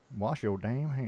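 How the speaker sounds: sassy, acted southern drawl. Saying the show motto after being asked for it sassy: sassy southern drawl. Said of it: "with a southern drawl to it too".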